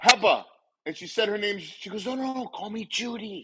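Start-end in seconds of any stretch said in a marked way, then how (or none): 2.1-3.4 slow, hushed, secretive stage whisper meant to carry. Retelling a woman who didn't want her name said, imitating a half-whisper. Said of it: "we can hear you whispering".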